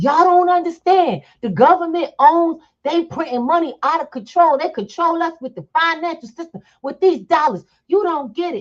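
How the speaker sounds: very high, shrill, all-out rant screamed at top of lungs. Telling a story about a holiday-season evening on the street, retelling a man screaming. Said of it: "screaming at the top of his lungs".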